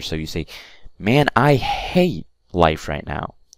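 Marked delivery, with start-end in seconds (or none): 1.0-2.3 emphatic, emotional, raised voice, slow. Demonstrating how stressing an emotion raises the voice, louder emotional emphasis. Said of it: "you raise your voice just a little bit higher".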